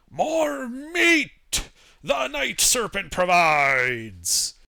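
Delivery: very slow, drawn-out, swooping dwarf yell. Voicing a dwarf who points at the party, dwarf yelling. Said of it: "so he yells out".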